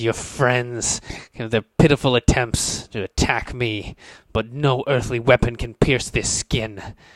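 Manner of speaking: contemptuous, sneering villain voice. A game master voices an enemy who sneers at the players, sneering. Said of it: "He sneers at you and he says".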